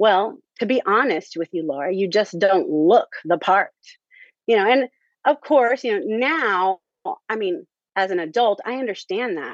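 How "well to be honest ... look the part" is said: imitated very rude tone. Retelling what she said in front of everybody: imitating a very rude tone. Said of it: "really in a very rude tone".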